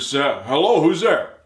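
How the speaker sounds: put-on stern, slow tone. Retelling how a voice answered a knock at the door: imitating a stern voice. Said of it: "this stern voice answered".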